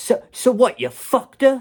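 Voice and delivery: put-on Bronx accent, very high, very loud, shrill. Acting out what she would say to you in the car, in a put-on bronx accent. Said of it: "She doesn't have a Bronx accent".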